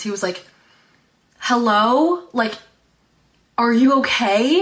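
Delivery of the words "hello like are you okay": put-on very slow, loud, drawn-out yell into the distance. Retelling a dad yelling into the distance: imitating someone yelling. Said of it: "started yelling off into the distance".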